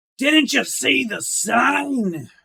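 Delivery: gruff, very high, very loud hollered shout. A game narrator voices someone calling out in response to the group: very gruff voice. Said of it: "you hear a very gruff voice call out".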